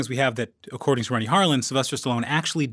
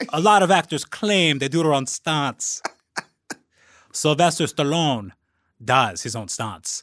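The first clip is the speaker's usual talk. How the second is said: attempted bad Finnish accent, slipping in and out. Asked for the quote again, the speaker repeats it: Finnish accent. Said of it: "going for a finish".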